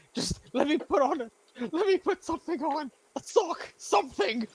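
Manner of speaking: crying while speaking. As a frightened, tied-up character trying to get out, sobbing while pleading. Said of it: "as I'm sobbing".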